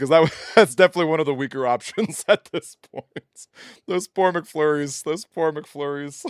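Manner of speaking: giggling, laughing through the words. Reacting to a weak game result, laughing while talking. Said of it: "I'm sorry I'm laughing".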